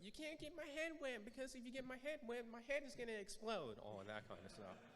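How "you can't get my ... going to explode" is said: put-on very high, small child's voice. Retelling words once said as a child on a playground: imitating own little kid voice. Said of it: "with my little kid voice".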